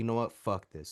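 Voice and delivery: put-on mutter under breath. Retelling what a girl said while walking away: imitating a mutter under breath. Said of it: "she says something under her breath like that".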